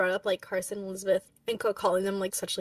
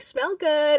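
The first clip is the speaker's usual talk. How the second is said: put-on teasing voice, higher and louder; 8 semitones higher, 7 dB louder than usual. Retelling a scene where Carson teases her: imitating Carson teasing. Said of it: "Carson teasing her".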